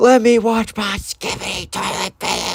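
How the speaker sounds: acted-out, shrill, very high childish screaming tantrum. Retelling Ben's reaction to being told to stop watching videos, imitating Ben screaming. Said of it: "Ben just starts screaming like".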